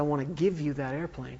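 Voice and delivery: ordinary talk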